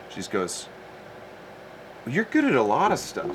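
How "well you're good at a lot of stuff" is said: mock sweetest possible, sweet, high little voice. Retelling what your sister said to you in the car, retelling a sweet voice. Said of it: "in the sweetest voice".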